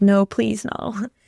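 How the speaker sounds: acted tearful pleading. Retelling her reaction when he calls her, retelling a tearful plea. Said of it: "I'm in tears".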